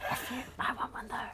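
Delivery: unvoiced stage whisper, loud enough to hear.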